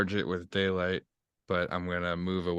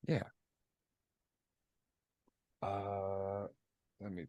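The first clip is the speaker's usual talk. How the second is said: hushed, hesitant half-whisper with drawn-out uh; 2 semitones higher, 9 dB quieter than usual. Half-whispering along with the other speaker, half-whispering. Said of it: "I don't know why I'm whispering".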